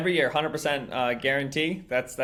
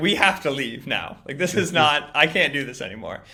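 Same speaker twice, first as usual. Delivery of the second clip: acted, mad, irritated, worked-up outburst; 4 dB louder than usual. Retelling how a show host got mad and ended the show: imitating Mina angry. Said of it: "she got so mad at me".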